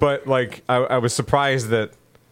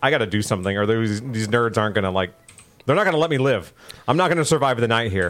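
plain

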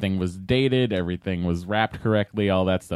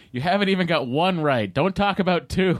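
mock yelling, high and raised; 9 semitones higher than usual. Retelling how Ramsay answers a man who talks of franchising his restaurant, imitating Ramsay yelling. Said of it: "Ramsay just yells at him and goes".

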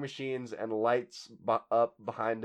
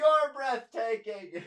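put-on, very high-pitched, distant-sounding yell; 12 semitones higher than usual. Retelling a fan yelling from the back of the crowd: imitating a shout from the crowd. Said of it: "a guy goes like this".

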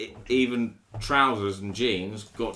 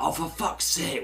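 put-on Scottish accent, raised pitch; 6 semitones higher than usual. Retelling what a father said after a childhood accident: imitating a Scottish accent. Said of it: "my dad's Scottish".

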